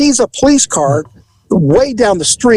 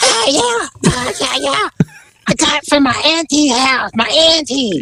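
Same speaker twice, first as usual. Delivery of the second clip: put-on cartoon kid voice, higher; 7 semitones higher, 4 dB quieter than usual. Retelling the answers of a person being questioned: Cartman voice. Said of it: "why do you sound like Cartman from South Park?".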